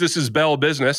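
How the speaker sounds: ordinary talk, nothing marked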